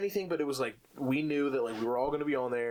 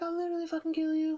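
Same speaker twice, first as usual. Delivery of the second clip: very high little schoolboy voice. Retelling own past threats in online games: imitating own tiny kid voice. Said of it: "Your voice was probably all tiny".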